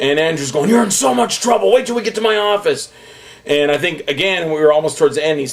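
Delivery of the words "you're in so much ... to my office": high-pitched, scolding, shouting yell. Retelling the person pushing him through the crowd: imitating Andrew yelling. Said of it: "Andrew's still yelling at me".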